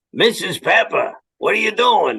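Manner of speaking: put-on older Brooklyn accent. Recalling voicing both characters when pitching a show, older Brooklyn accent. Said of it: "a general older kind of Brooklyn accent".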